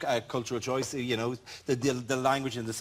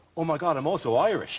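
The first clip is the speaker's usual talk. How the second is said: ordinary talk, nothing marked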